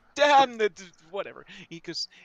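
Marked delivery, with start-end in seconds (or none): 0.2-0.8 put-on Jamaican accent. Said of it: "where'd my Jamaican voice go?".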